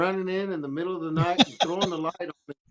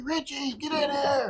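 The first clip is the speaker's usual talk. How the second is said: mock shrill, very high yelling; 9 semitones higher than usual. Retelling how Richie's dad yelled for him in the night, retelling dad's yell. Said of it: "his dad started yelling and raising Cain".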